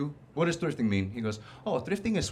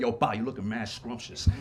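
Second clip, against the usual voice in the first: put-on aggressive voice, lower; 4 semitones lower than usual. Retelling what guys say on the street: imitating aggressive guys. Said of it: "Them being mad aggressive and shit".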